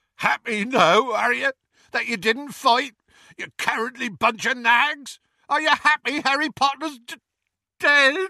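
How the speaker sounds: very high, tearful, sobbing, roaring bellow. Narrator reads Hagrid shouting at the centaurs during the procession; Hagrid's sobbing bellow. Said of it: "[name] could not continue, / [name]'s unexpected bellow nearly forced [name]'s eyes open. / sobbed [name]. / [name]'s unexpected bellow nearly forced [name]'s eyes open".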